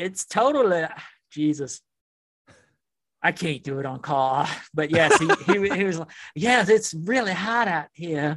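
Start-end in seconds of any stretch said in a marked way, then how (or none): 6.4-8.4 put-on southern Louisiana accent, laid on thick. Asked to do the accent for the others, give a Zero impersonation with a Louisiana accent. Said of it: "do a zero impersonation".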